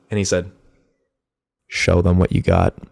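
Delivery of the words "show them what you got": acted whisper, lower pitch. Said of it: "My dad whispers in my ear".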